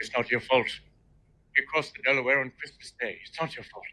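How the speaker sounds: very low, deep put-on character voice. Doing an impression of Robin Williams talking about swimming with alligators: Robin Williams voice. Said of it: "that is Robin Williams' voice".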